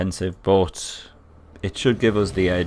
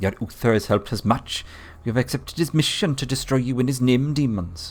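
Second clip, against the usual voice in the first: bad, pitched-up Welsh accent sliding into Jamaican; 5 semitones higher than usual. Voicing a master occultist while playing a game, Welsh accent slipping into Jamaican. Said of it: "I feel like that went Jamaican again".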